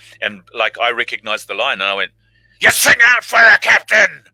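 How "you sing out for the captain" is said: very loud, high, rough, gruff sailor yell. Retelling playing rough sailors and recognizing the line: rough sailor voice. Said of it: "Like this, and spitting everywhere and you know, really being kind of hardcore".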